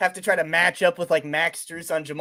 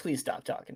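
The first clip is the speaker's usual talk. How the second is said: mock pleading, quieter; 3 semitones lower, 12 dB quieter than usual. Acting out the exhausted bike driver begging a rider: imitating someone begging. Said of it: "She's just begging you to stop".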